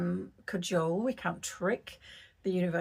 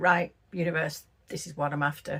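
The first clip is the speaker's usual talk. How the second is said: businesslike, matter-of-fact, no pleading at all; 12 semitones higher, 5 dB louder than usual. Retelling how they once addressed the universe about what they wanted, stating it plainly without pleading, matter-of-fact. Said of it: "There was no pleading".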